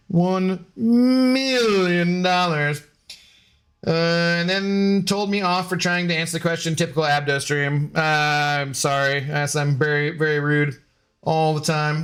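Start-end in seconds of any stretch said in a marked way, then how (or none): 0.1-2.8 villain voice with "million" drawn out. Answering a chat request to do Doctor Evil: Doctor Evil voice. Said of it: "Just do Doctor Evil".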